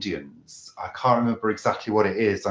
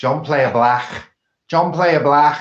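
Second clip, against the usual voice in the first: attempted Liverpool Scouse accent, loud and high; 6 semitones higher, 7 dB louder than usual. Welcoming a caller, then trying out a Scouse accent: put-on Scouse accent. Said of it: "My Scouse accent".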